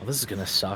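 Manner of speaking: very quiet whisper under the breath. Narrating a stabbing, the speaker voices a thought out loud: whispering. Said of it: "I'm just gonna whisper out loud".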